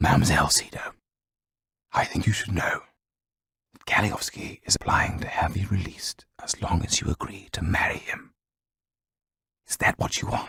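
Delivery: almost whispering, speaking very softly. Reading a story aloud, the lawyer after the door closes: almost whispering. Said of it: "spoke almost in a whisper".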